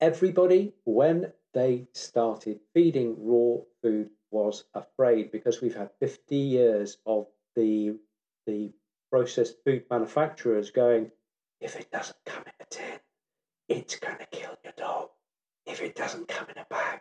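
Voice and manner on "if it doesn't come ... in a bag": imitated whisper, quieter. Imitating processed food manufacturers warning owners: imitating a manufacturer whispering. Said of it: "I'm whispering".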